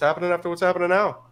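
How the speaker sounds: fast, high, rattled off in one go. Showing how others say the question, said fast. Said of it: "but they say it fast".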